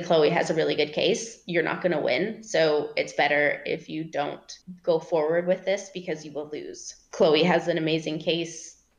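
ordinary talk, nothing marked

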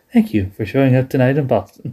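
put-on, very quiet voice. Retelling a wrestling promo, imitating Vince McMahon going very quiet. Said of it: "And he goes very quiet".

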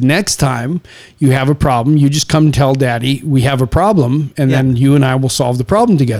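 ordinary delivery

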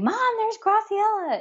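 very high, piercing, excited scream. Retelling a daughter shouting at a trampoline park: imitating someone screaming. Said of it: "she started screaming".

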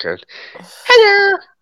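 very high, loud, squeaky little monster voice. Trying the Elmo voice again after the first attempt failed, in Elmo voice. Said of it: "There's my elm voice".

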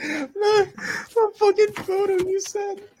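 squealing, laughing through the words. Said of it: "Chris, why are you laughing?".

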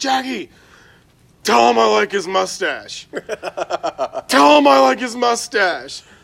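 very loud, high heckling yell. Retelling yelling at Jackie from the back seat at Taco Bell, imitating own yelling. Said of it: "and I'm just yelling".

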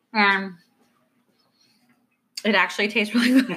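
talking with mouth full. Chatting with another speaker after shoving cookies in mouth: talking with mouth full of cookies. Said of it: "I just shoved some cookies in my mouth".

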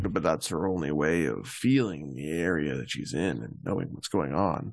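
low, soothing, reassuring character voice.

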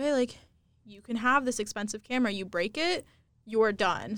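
ordinary delivery

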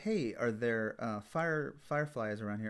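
ordinary delivery

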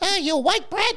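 piping, very high squeaky voice. Retelling how a roommate came in at 3 o'clock before the game, in Lovelace's real squeaky voice. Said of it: "he had that real squeaky voice".

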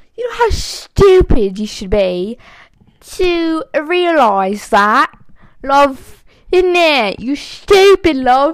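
very loud put-on British accent. Recounting forgetting to cross off a found word, switching to a British accent. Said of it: "I should say this in a British accent".

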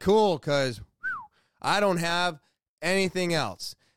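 ordinary talk, nothing marked

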